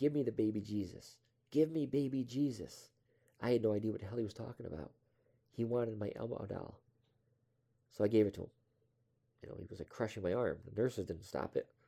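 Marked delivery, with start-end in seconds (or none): 0.0-2.9 put-on, insistent, repeated, drawn-out, demanding scream. Retelling an old patient grabbing an arm, imitating someone screaming. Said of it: "He kept screaming at me".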